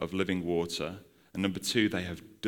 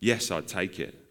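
ordinary delivery

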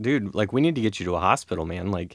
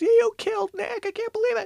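put-on, very high, panicked top-of-the-lungs shriek. Retelling a car accident, quoting the girlfriend: retelling a scream at the top of her lungs. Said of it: "my girlfriend's screaming at the top of her lungs".

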